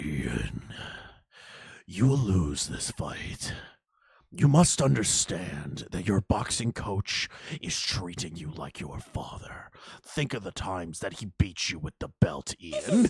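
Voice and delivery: very low, hellish, demonic, possessed-sounding voice. Retelling what a woman told a boxer before his fight, demonic voice. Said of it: "this fucking demonic voice come out of her mouth".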